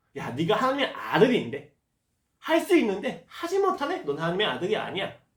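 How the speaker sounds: mocking, taunting tone.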